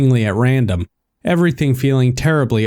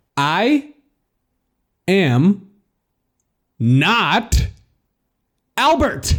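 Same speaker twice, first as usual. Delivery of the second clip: very slow, deliberate, pitched up, each word spelled out; 7 semitones higher than usual. Reading a story, telling a caller who the speaker isn't: slow, deliberate statement. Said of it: "I stated this slowly".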